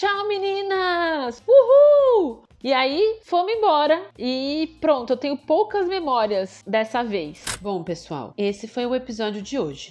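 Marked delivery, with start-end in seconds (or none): 0.0-2.5 mock shout, much higher, louder and slower. Retelling how she shouted goodbye to the girls from inside the car; retelling a shouted goodbye. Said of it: "ela gritando".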